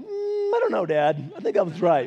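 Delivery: swooping, doubtful, unconvinced, unapologetic tone. Retelling how the oldest daughter answered correction: imitating Avery doubting. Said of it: "and she'd be like".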